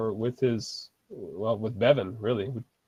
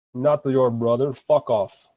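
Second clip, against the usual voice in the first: Russian-sounding voice, louder; 4 dB louder than usual. Voicing an orc who rejects a player's greeting: Russian accent. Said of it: "you sound Russian".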